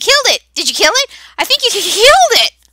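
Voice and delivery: shrill, very high, loud gnome chatter. A small gnome at a hut door chatters at the newcomer; high-pitched gnome chatter. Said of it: "begins to chatter in a high pitched voice".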